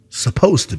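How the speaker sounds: "supposed to be" emphasized.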